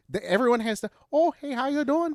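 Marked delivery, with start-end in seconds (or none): 1.2-2.2 put-on pitched-up, Canadian-tinged Minnesota accent. Describing people north of Chicago and imitating them: Minnesotan accent. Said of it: "the weirdest accent".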